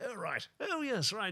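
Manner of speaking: easygoing, mellow tone, pitched very high. Retelling how a man responded, imitating a mellow voice. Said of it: "He was a bit more mellow".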